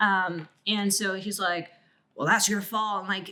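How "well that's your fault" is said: put-on hostile, aggressive, blaming tone. Retelling a brother's reply during an argument: imitating an aggressive retort. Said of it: "became aggressive with me".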